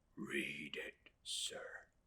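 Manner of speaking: low, trembling voice. Narrator reads Mister Peggotty asking the narrator to read to him: low, shivering voice. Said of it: "he said in a low, shivering voice".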